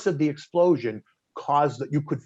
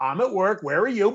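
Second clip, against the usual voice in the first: amused chuckle-talk, laughing through words, pitched up; 6 semitones higher than usual. Retelling your answer when a crying woman screamed asking where you were, retelling a laugh while talking. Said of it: "I laughed".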